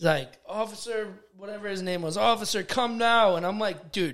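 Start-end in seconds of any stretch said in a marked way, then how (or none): 2.2-3.4 play-acted, urgent, high, loud screaming. Recounting a clash at school, the speaker acts out the other person: retelling a scream for the officer. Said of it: "he screams for the uh".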